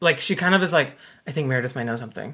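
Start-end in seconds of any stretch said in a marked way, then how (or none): 1.3-2.3 quiet mutter under breath. Retelling what she said to John on the phone: imitating saying it under her breath. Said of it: "under her breath".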